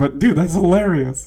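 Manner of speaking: talking while laughing. Speaker apologizes for finding the other person's priority funny, laughing while talking. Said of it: "I'm sorry, I'm laughing".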